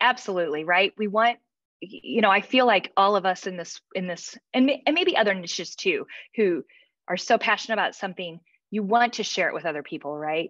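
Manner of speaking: ordinary talk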